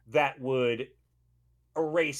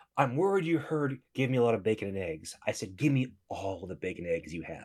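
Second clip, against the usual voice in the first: low, deadpan, imitated voice. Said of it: "I feel like Ron Swanson here".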